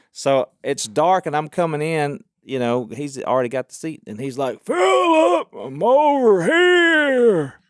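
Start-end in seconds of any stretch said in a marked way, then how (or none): 4.7-7.5 loud, very high, very slow, drawn-out outdoor call. Retelling a friend calling out in a dark movie theater: imitating Mountain Man's loud voice. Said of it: "Mountain Man can't whisper".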